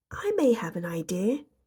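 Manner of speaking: tiny, very small, timid, shy little voice. Reading a story aloud, Little Miss Shy speaks up at the meeting: Little Miss Shy's small, shy voice. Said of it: "said a very small, shy voice".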